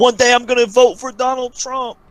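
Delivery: piercing, very high, loud shriek. While watching a fight, act out a man standing up cage side, imitating someone screaming. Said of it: "He's screaming".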